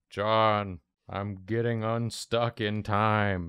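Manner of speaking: slowed-down slow-motion voice, every word stretched. Voicing a character who calls out to John: slow-motion Garfield voice. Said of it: "It sounds like he's in slow-mo".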